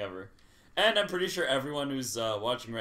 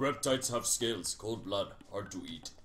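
put-on deep caveman voice, lower pitch; 3 semitones lower, 4 dB quieter than usual. In a caveman-times role-play where everyone talks deep, deep caveman voice. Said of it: "everyone has a deep voice".

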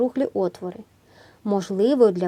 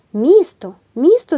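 very loud, high-pitched shout; 6 semitones higher, 9 dB louder than usual. A girl spots a city near the shore and calls to Freddie: shouting. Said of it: "закричала Елі".

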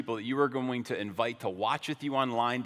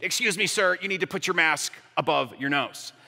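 acted, bold attitude with raised voice; 4 semitones higher, 5 dB louder than usual. Retelling what the girl behind the plexiglass said: imitating a really bold attitude. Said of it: "says with a really bold attitude".

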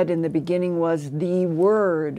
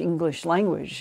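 ordinary delivery

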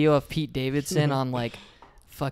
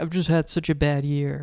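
ordinary delivery

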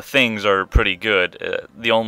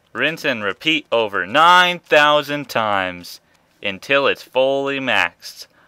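heavy sarcasm, pitched up, tongue-in-cheek; 5 semitones higher, 3 dB louder than usual. Speaker narrates a step-by-step process in a video; sarcastic. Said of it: "Did you notice my sarcasm within that whole dialogue?".

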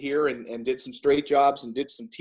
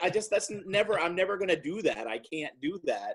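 ordinary talk

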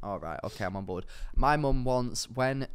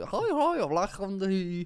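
very slow, deliberate, high put-on Welsh accent; 8 semitones higher than usual. Imitating how people in Wales spoke: mock Welsh accent. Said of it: "That's a bit Welsh, isn't it?".

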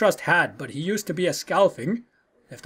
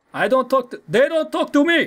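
terrible fake Russian accent, higher pitch; 6 semitones higher, 3 dB louder than usual. In a game scene, a character answers questioning in a really bad russian accent. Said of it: "this guy has a really bad Russian accent".

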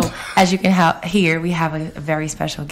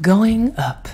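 automated elevator announcer voice; 4 semitones higher, 3 dB louder than usual. Speaker doing a bit for a co-host: elevator announcement voice. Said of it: "My best elevator voice".

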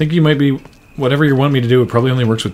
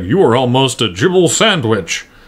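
jowly put-on voice, slower. Retelling how a man says a weird line, jowly delivery. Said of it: "He, like, jowls his way through it".

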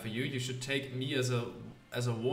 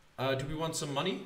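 usual speaking voice

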